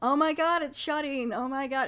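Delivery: high, dripping sarcasm with fake panic. Retelling a man closing the door on his neighbor, mock-sarcastic retelling. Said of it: "he's just real sarcastic".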